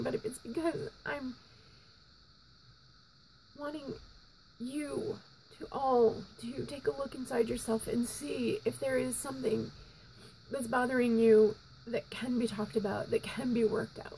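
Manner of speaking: tearful, weeping voice, crying through the words. A speaker addressing the audience about not getting over it, crying while speaking. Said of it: "I know I'm looking like a miserable mess and I'm crying".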